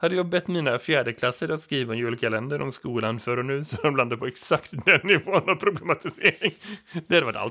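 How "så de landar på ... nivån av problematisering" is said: loud speech with laughter throughout. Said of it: "Förlåt, jag börjar skratta".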